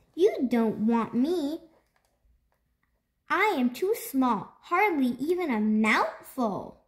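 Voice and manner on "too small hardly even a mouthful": ordinary delivery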